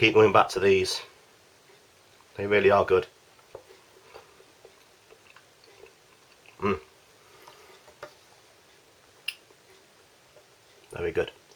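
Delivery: speaking with a mouthful of food, chewing. Doing a food review, speaking with mouth full. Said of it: "excuse me for speaking a mouthful".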